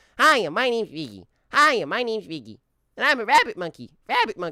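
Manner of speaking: very high, loud, swooping voice pushed way up. Introducing the character, in Riggy's pitched-up voice. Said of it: "pitch up Riggy's voice".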